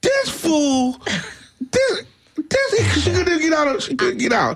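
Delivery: high-pitched, hysterical sputtering. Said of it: "she's hysterical".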